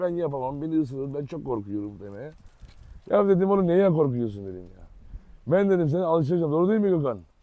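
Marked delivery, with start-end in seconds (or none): 0.0-2.0 put-on teary, whiny, soft, low whimpering plea. Retelling how Gökhan reacted to being asked to make a video, imitating Gökhan crying. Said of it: "Başladı ağlamaya".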